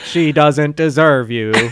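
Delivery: low-pitched, machine-like voice. Retelling a scene where an answering machine talks, the speaker does a Stephen Hawking voice. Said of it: "It's the Stephen Hawking's voice".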